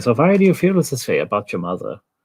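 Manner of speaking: put-on German accent. A speaker jokes about how psychiatrists talk to patients, demonstrating in a german accent. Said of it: "With a German accent".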